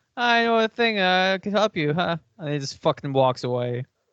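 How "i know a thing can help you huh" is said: put-on twitchy, jittery, nervous voice, pitched up. Mocking a game character said to have nervous energy: imitating a nervous character. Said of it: "This man has nervous energy".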